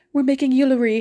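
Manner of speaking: put-on Swedish accent with pitch pushed very high. Describing a YouTuber the speaker watches, imitating a YouTuber's accent.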